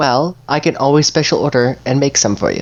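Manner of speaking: sweet-natured, friendly middle-aged woman's voice. Voicing a shopkeeper greeting customers at the door: sweet middle-aged shopkeeper lady. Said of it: "she has a very sweet demeanor about her".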